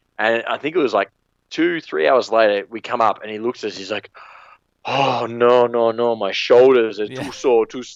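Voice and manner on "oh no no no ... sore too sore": put-on thick Jamaican accent, higher and louder. Retelling what a slide worker said: thick jamaican accent. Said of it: "In the thickest Jamaican accent".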